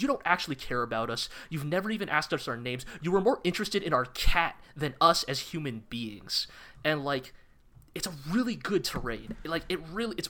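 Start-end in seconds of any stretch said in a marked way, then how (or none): none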